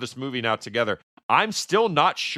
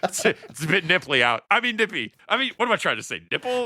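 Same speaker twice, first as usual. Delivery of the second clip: higher pitch, with repeated self-corrections; 5 semitones higher than usual. Quoting a movie scene to another speaker: imitating Clark Griswold. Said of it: "you sound like Clark Griswold in that scene".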